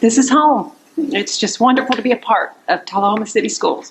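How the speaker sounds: choked up, fighting to hold back emotion. Thanking the board after a contract vote, holding back emotion. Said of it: "trying not to get emotional".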